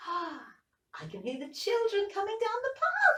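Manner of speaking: tiny squeaking chick voice, pitched way up. Reading an Easter story aloud, speaking as the chick: squeaky chick voice. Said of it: "squeaked the chick".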